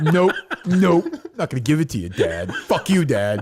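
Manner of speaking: angry, sulky, pouting tone. Picturing a grown son refusing his dad, imitating someone all mad. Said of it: "all mad".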